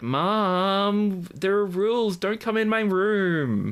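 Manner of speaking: very high, pinched, nasal American voice. Describing Jeffrey and quoting what he tells his mom; imitating Jeffrey, nasal American accent. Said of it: "He has a very nasal American accent".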